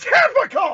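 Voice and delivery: acted, very high, loud scream. Retelling being at a game and screaming at a trip: retelling a scream. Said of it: "and I screamed".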